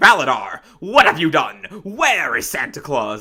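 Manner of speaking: stern, stone-jawed hero voice. Retelling a movie scene where the hero confronts the villain: Kibo stone-jawed hero voice. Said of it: "stone-jawed, like, hero that he is".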